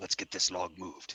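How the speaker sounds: speaking in a whisper. Playing a character asking a companion to move a log: whispering. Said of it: "I'm going to kinda whisper to".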